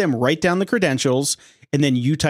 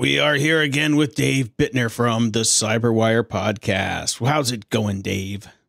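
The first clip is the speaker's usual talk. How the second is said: mock pirate-like voice, pitched lower; 3 semitones lower than usual. Podcast host welcoming back a guest, in a put-on pirate-like voice. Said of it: "is this podcast like a pirate day?".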